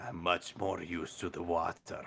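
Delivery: lizard-folk game character voice. Joking about how an Argonian would answer: put-on Argonian voice. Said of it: "That was a great voice".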